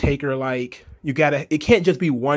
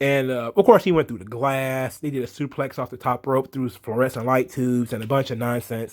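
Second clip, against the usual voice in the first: plain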